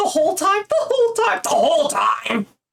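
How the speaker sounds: very high-pitched voice. Repeating the other speaker's words like Sally Field in Mrs. Doubtfire. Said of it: "You gotta say it like Sally Field from Missus Doubtfire".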